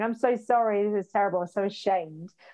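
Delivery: put-on groveling, apologetic tone. Retelling apologizing to hospital staff after a panic attack: retelling groveling apology. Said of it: "it's like I was prostrating myself going".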